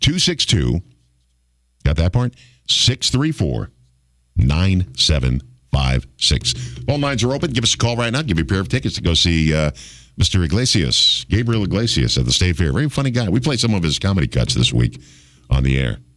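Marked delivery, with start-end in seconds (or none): 0.0-6.5 slow, deliberate, carefully spaced number readout. Repeating the phone number for callers after complaints it was too fast: saying a phone number slowly. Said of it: "I'll say it one more time real slow".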